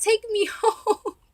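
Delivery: play-acted, very high, shrill, loud toddler scream. Telling how, at three, you begged your mom to leave: retelling a childhood scream. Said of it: "and I'm screaming".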